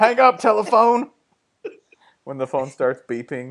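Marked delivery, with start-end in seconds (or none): 0.0-1.1 very high, barking, shouted yell. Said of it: "He just yells at him".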